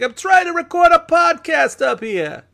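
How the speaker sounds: very high, loud, heavy put-on Brooklyn accent. Imagining complaining while recording a podcast, in a thick brooklyn accent. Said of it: "in a very thick Brooklyn accent".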